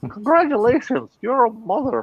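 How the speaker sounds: put-on very high-pitched drunken stork voice. Retelling what the drunken stork said with the baby, in a put-on drunken stork voice. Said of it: "Do the voice again".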